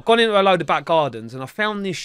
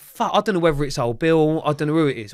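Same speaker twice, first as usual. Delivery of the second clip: ordinary talk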